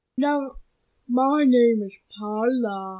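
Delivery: put-on slurred, mushy, toothless-sounding, drunk-like voice. Correcting someone who called the character Isaac, giving her name: slurred, toothless voice. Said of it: "like you're, like, drunk or, like".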